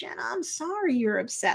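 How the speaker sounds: acted, very sweet, gentle delivery. Retelling a character's apology to upset jenna: imitating someone speaking very sweetly. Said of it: "all very sweetly".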